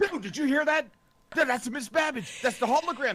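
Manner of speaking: very high, loud, amped-up hype-man voice. Planning a prank with friends, showing how they'd play the hype man. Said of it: "I'll be like the hype man".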